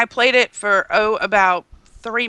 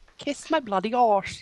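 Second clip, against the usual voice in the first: put-on British accent; 7 dB quieter than usual. Trying out a british accent for the others: put-on british accent. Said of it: "Here's my British accent".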